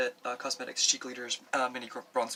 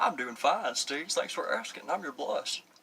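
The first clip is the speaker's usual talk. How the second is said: thick, put-on, super country Southern accent; 4 semitones higher than usual. Steve voicing his blush replying to his greeting, super country southern accent. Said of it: "Has a super country accent".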